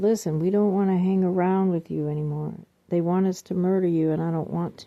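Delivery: ordinary talk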